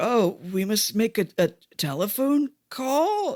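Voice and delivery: put-on slow, doddering, fumbling, bumbling old man voice. Recapping a scene where he interrupts her huge speech, bumbling slow old man voice. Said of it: "the most bumbling, slow old man".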